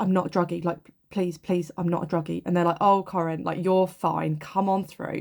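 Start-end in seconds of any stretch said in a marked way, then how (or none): 0.0-2.4 put-on shaky, trembling, desperate pleading. The speaker retelling how she insisted she needed help during withdrawals; retelling shaky desperate pleading. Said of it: "And I'm like shaking like this".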